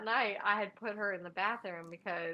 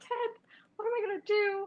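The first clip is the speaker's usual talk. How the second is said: very high, tearful, sobbing voice; 14 semitones higher, 4 dB louder than usual. Retelling freaking out over the dead dog, retelling own crying plea.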